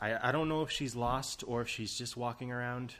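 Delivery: ordinary talk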